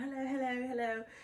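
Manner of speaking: fake English accent, kept up throughout. Retelling greeting everyone on arriving inside: put-on english accent. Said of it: "wait, you're from England?".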